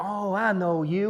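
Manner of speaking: put-on big, thick, very slow Texas accent drawl. Retelling what the magazine guy said on meeting him: Porter Freeman's thick Texas accent. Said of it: "a big, thick sort of Texas a-, accent".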